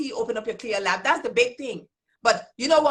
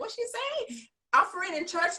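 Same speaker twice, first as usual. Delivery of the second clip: high, confused, puzzled tone. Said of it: "they'll be like".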